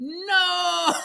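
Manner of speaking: shrill, high, long drawn-out anguished distraught wail. Retelling the mother's reaction to a pregnancy announcement; retelling a distraught scream. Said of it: "throws herself on the floor and starts screaming".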